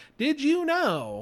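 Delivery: very high, mechanical, synthesized app-like robot voice. Describing TikTok fact videos to a co-host, in the TikTok robot voice. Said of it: "It's that robot voice I can hear it in my head".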